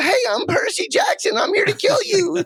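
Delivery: very high, swooping, sing-song hero voice. Joking about how the lead sounded before his voice changed: imitating Percy Jackson before voice changed. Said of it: "Before he's like".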